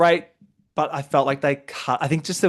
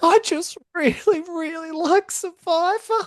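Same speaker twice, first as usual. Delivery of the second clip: acted, very high, slow, weepy, drawn-out sobbing speech. Retelling a contestant's tearful auction moment: imitating Lisa crying. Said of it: "she's crying. She's like".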